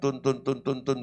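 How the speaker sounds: monotone, repetitive babble of flat droning syllables. Preacher showing what monotonous speaking in tongues sounds like, monotone repetitive babble. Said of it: "nggak monoton".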